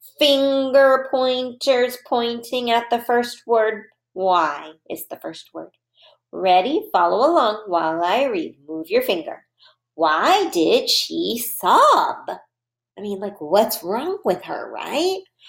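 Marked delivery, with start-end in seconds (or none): 9.9-12.3 rising tone, lifting at the end. Reading aloud as listeners follow with their fingers, in a question voice. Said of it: "we'll have our question voice again".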